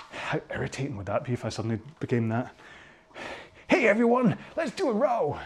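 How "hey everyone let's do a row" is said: fake, pitched-up American alpha-male accent. Leading a rowing cooldown, the speaker suddenly tries a put-on American alpha-male accent. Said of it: "the American accent is just purely because that's how I see the alpha male thing".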